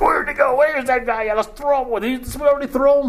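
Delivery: high, confused, baffled, bewildered mob voices.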